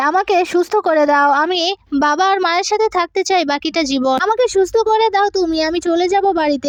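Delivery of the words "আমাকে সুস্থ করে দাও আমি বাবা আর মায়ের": plain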